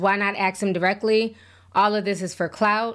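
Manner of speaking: ordinary talk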